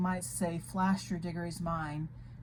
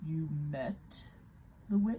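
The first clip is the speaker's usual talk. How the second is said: low, threatening growl; 3 semitones lower, 3 dB quieter than usual. Reading a story aloud, Aslan interrupts another character, in a low threatening growl. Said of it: "in a low voice which had the threat of a growl in it".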